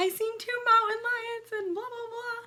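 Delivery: mock very high, tearful crying voice. Retelling own words to another person after a scare: imitating own past crying. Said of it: "I'm still, like, crying".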